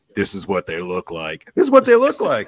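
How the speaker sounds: put-on loud, old-fashioned Oklahoma accent with swooping pitch. Imitating an old-school scout saying what they look like, in an Oklahoma old-school scout voice. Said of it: "that Oklahoma voice, you go".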